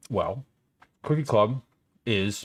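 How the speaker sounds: mid-chew speech with mouth full. Streamer starts explaining the cookie club drawing: talking while chewing. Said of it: "Let me finish chewing first".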